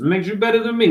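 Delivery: put-on Italian-accented voice. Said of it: "This is my Italian voice".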